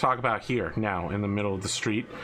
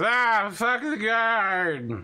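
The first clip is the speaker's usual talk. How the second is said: put-on very high, very slow, loud drunken drawl; 12 semitones higher, 5 dB louder than usual. Voicing a man the guard just hit, who stumbles: acting drunk. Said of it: "stumbles as if he actually is drunk".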